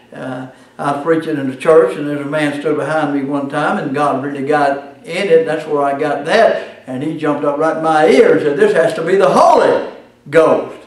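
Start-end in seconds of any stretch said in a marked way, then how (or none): 8.5-10.6 emphasis placed on the word holy. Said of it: "He put the emphasis on the holy".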